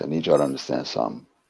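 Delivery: very low, hushed put-on voice. Speaking to the ladies during a talk bit, in a put-on deep voice. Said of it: "Got to put on my deep voice for this".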